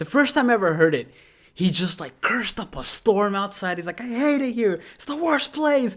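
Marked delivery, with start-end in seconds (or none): 4.0-5.9 mock shout at top of lungs, much higher. Describing a man who goes berserk outside, imitating him shouting. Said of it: "he shouts at the top of his lungs".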